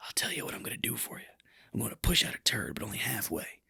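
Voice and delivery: soft, secretive whisper. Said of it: "I was already whispering".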